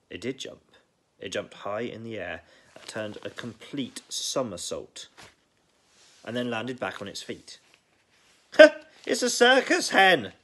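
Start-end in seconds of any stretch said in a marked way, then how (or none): 8.5-10.2 shrill, very high, drawn-out shout. Grandma on the rooftop watches the hen somersault, shouting. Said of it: "Grandma shouted from the rooftop".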